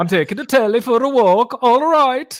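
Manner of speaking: put-on Danish accent. Repeating the line when asked to do it in a danish accent. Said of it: "You got to do it in a Danish accent".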